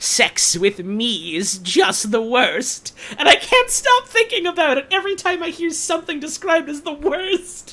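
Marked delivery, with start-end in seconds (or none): 0.0-2.9 put-on villain voice, much slower. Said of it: "in that voice just make him go".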